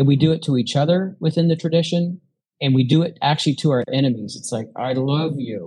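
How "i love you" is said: seething voice forced through gritted teeth. Showing how passive aggressive people speak to enemies, through gritted teeth. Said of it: "It's like through gritted teeth".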